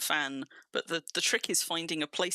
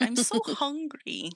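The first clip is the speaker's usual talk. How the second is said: demanding pet voice, higher; 10 semitones higher, 3 dB louder than usual. Retelling how the pet has pestered all evening for food: voicing the hungry pet. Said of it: "the little horror that has been dabbing me all evening. Being like".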